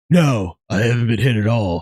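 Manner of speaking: put-on very low voice with a Hawaii accent. Retelling a man answering the cops: Keanu impression, Hawaii accent. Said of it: "That was a really good Hawaii accent".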